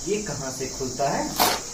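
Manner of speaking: low, soft, sneaky mutter.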